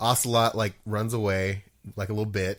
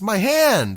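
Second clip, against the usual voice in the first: very high, shrill, loud scream; 12 semitones higher, 8 dB louder than usual. Retelling what a character screams after losing his hand: imitating a scream. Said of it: "He screams".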